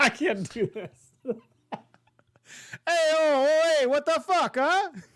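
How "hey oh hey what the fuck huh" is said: put-on terrible Italian accent, high-pitched and drawn out. Voicing Chop in the scene where the ship shoots at the Phantom, terrible Italian accent. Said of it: "in a really terrible Italian accent".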